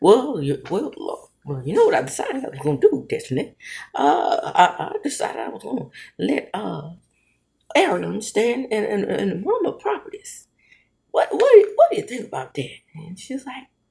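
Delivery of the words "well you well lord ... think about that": hesitant, hemming, halting, rambling character voice. Retelling a furniture store visit with Destiny: imitating Motel's voice. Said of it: "I forgot that I could do his voice".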